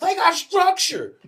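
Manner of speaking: put-on voice, very high and loud. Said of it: "in Weldon's voice".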